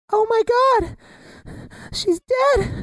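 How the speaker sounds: very high, tiny, squeaky little mouse voice. Acting exercise, told to say the line as a tiny mouse, tiny little mouse voice. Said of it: "say it as if you're a tiny, tiny little mouse".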